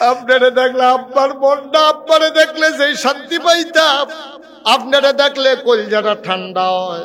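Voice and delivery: high, loud, tearful pleading voice.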